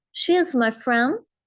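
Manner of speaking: drawn-out "she" and "friend", quick "is my". Teaching English sentence rhythm with she is my friend: stretch she and friend. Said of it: "शी को खींच रही हूँ, friend को खींच रही हूँ। इज माई, इन दोनों को मैं नहीं खींच रही".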